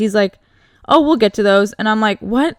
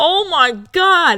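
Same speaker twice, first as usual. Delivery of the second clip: put-on, high, screamed disbelief; 6 semitones higher than usual. Speaker retells being woken for a surprise visit, retelling own screaming. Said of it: "And I start screaming".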